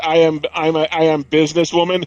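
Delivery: put-on heavy Russian accent, laid on thick. Quoting a movie line by the villain's lead lady: thick Russian accent. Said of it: "talks with a thick Russian accent".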